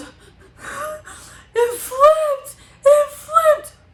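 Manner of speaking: acted, slow, hysterical sobbing breaking up words. Retelling what she said when asked what happened, imitating hysterical crying. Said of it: "she's still just hysterically crying".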